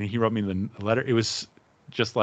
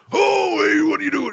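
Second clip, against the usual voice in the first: needling, very high, loud heckling jabs; 6 dB louder than usual. Old men behind the speaker at a game heckle; speaker mimics Muppet Show balcony hecklers. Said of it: "like the two guys on the balcony in the Muppet Show".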